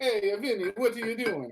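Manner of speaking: put-on Italian accent. Discussing how Italians supposedly sound, giving a stereotypical Italian accent. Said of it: "I think stereotypically they sound like that".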